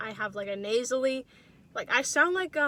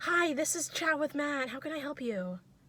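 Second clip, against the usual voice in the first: polite, courteous customer-service phone voice; 4 semitones higher, 5 dB quieter than usual. Showing how they greet callers on the phone, in their phone voice. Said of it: "This is my phone voice".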